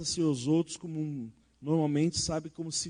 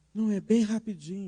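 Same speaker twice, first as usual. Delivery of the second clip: timid, meek, self-effacing, apologetic tone; 4 semitones higher than usual. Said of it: "Então fala baixinho".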